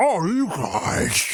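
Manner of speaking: boggy, swampy monster voice. Playing Swamp Thing, who gets a surprise party in the game, Swamp Thing voice. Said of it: "It's very swampy. I like the voice you reached for".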